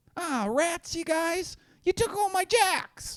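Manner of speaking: very high, bouncy, animated cartoon kid voice. Imitating how Rosebud talks, in Rosebud's cartoon kid voice. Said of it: "a good cartoon kid voice".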